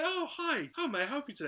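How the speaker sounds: very high, fake smiling customer-service phone voice. Retelling a complaint call to customer service, imitating the agent: fake customer-service phone voice. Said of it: "the fake like no- noise voice, the constant smile on the phone".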